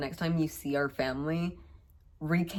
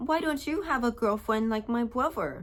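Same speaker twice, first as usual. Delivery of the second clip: put-on high, cute, adorable seven-year-old girl's voice; 7 semitones higher than usual. Retelling what a little cousin asked the speaker, in an adorable seven-year-old voice. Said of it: "in her adorable seven year old voice".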